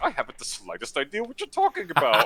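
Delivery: loud, swooping, sing-song feigned innocence. Retelling a game scene, imitating Hades feigning ignorance. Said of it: "He's like".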